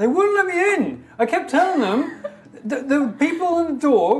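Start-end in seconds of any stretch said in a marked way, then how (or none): 0.0-2.2 raised voice, higher and louder. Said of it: "it's playing quieter".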